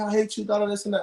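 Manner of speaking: normal talking voice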